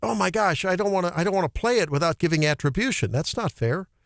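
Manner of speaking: ordinary talk, nothing marked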